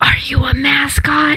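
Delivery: whispering. Asking a creature in a game scene a question: whispering in character. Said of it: "I whisper to him".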